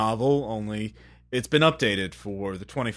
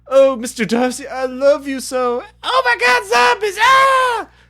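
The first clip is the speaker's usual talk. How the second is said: very high, loud swooning shriek. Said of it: "they say it like that?".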